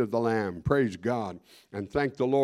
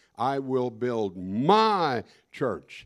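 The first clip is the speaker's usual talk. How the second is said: heavy stress on the word "my". Wondering how the Lord said a verse, with stress on my. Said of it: "I don't know if the Lord emphasized my".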